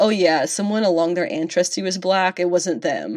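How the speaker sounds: plain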